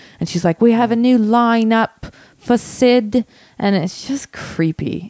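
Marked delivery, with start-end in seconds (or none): 0.6-3.3 put-on full Cockney accent, high and slow. Retelling how a manager spoke in videos: imitating a cockney accent. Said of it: "she's doing it in a full Cockney accent".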